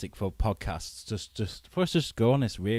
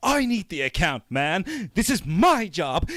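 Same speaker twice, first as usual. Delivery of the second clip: put-on hot-tempered, loud, swooping outburst; 8 semitones higher, 6 dB louder than usual. Describing a Mad Men character to friends, imitating a guy losing his temper. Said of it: "he's always losing his temper".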